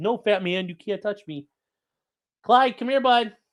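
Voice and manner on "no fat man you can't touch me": cheeky, teasing, taunting dog voice. Playing with the dog and voicing what it thinks: voicing the dog Clyde. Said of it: "It's like".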